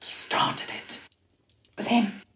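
very slow, hushed, secretive whisper. Whispering to the barman and pointing at the guy who started it: whispering. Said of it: "I'm just gonna whisper to him".

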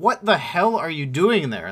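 mild, half-voiced yell, held down. Retelling storming in on a noise on the counter, retelling own yell. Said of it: "are you yelling at Simon?".

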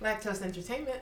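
soft, polished, professional phone voice.

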